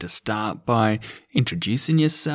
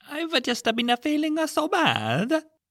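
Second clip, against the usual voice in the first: exaggerated put-on Italian accent, higher. Playing a short client introducing himself to the therapist: highly offensive Italian accent as Mario. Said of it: "with a highly offensive Italian accent".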